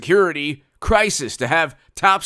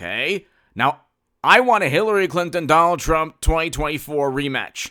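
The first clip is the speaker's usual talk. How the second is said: plain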